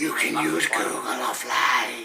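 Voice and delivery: creepy automated phone voice, low-pitched and loud. Telling how his mate's phone suddenly spoke by itself: imitating a creepy phone voice. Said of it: "in a right creepy voice".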